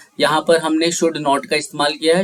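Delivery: ordinary talk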